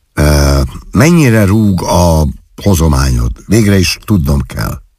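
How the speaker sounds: ordinary delivery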